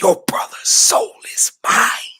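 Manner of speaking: loud, whispery villain voice, stage whisper at full force. Sneaking up behind someone as a joke, say it in a loud but whispery voice. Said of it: "in your most loudest but also whispery voice say".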